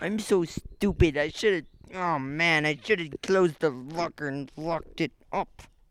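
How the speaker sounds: very low, slow, drawn-out scolding complaint. Impersonating a friend who complained about getting his stuff stolen: imitating Calder complaining. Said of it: "I was just doing a pers-".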